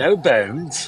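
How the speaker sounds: put-on British accent, film-character style. Retelling lines from an old horror movie: british accent. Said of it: "With that British accent".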